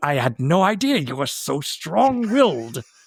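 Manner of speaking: mock gritted-teeth, clenched delivery. Acting out how she delivers compliments, retelling them through gritted teeth. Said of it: "You don't open your mouth. You just keep your teeth together".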